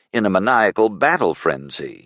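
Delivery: ordinary delivery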